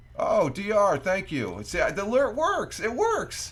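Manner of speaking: very high, loud, excited, thrilled burst.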